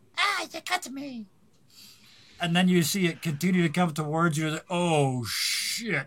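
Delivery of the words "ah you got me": tiny, very high, squeaky voice. Telling a shooting story, a tiny voice reacts to being hit: tiny voice. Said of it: "a tiny voice goes".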